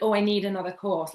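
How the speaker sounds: normal talking voice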